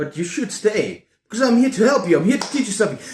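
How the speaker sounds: fast, erratic rambling. A video creator talks to viewers: talking fast and erratic. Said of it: "I'm talking fast today, I'm talking erratic".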